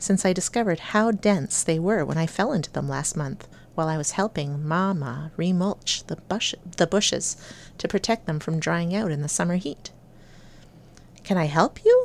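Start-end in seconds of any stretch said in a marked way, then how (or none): 11.2-12.0 suspicious, wary tone. The narrator questions a man hiding in the bushes, asking suspiciously. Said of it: "I asked suspiciously".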